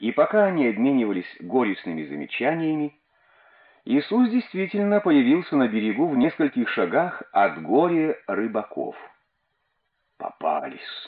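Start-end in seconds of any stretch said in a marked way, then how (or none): 10.2-11.1 grumbled, muttered, much lower and quieter. A fisherman speaks to the others as their teacher appears on shore, muttered. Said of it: "буркнул Андрей".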